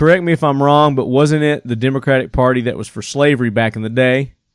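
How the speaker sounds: ordinary delivery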